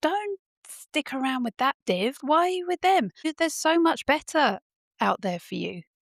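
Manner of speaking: high, mock shout. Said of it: "Are you shouting at the screen".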